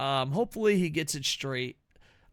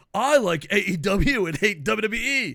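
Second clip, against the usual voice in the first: mock American voice, louder; 5 semitones higher, 8 dB louder than usual. Retelling a friend's bit where he turns his hat to play an american. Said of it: "he turns his hat around to be another American".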